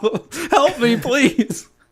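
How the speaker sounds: mock frantic, very high, drawn-out panicked voice. Retelling a car driving past on a hill: imitating own panicked plea. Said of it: "I'm freaking out".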